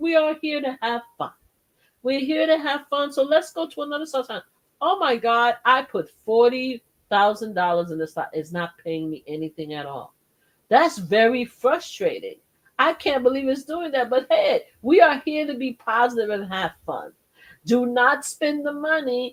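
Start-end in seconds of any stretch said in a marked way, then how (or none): none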